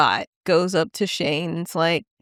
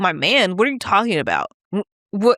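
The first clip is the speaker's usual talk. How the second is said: mock bristling, defensive, baffled disbelief; 3 semitones higher, 3 dB louder than usual. Retelling a best friend's reply on the phone: imitating someone getting defensive. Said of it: "he got so defensive".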